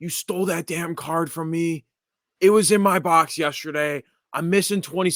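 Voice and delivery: put-on heated, accusing yelling, pitched high. Retelling a guy who walked by his table, imitating someone yelling. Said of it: "he starts yelling at me".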